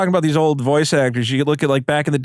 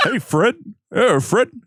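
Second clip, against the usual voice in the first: put-on cartoon caveman voice, higher; 5 semitones higher than usual. Asked how the cartoon characters sound, doing a Barney Rubble voice. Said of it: "Barney Rubble was".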